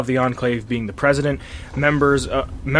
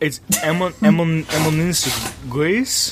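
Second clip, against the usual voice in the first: clumsy, mangled put-on French accent; 3 semitones higher than usual. Pronouncing a French phrase during a conversation, in a bad French accent. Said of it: "My French accent is awful".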